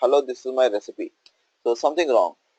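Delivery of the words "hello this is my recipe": usual speaking voice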